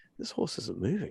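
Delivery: soft, quiet mutter, almost under the breath. Retelling how a child on someone's back spoke: imitating Joshua saying it quietly to himself. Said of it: "he just kind of said it really quietly".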